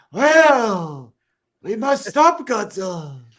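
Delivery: put-on old man dub voice. Comparing a character's voice to dubbed movies, the speaker does the old man dub voice.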